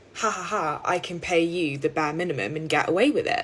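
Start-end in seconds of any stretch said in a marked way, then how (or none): none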